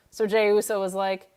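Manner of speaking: ordinary delivery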